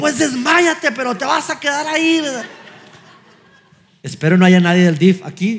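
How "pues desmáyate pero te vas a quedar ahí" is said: play-acted sharp yell, pitched very high. Retelling answering his son who says he will faint: imitating himself yelling. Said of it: "le empecé a gritar".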